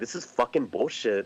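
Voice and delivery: ordinary talk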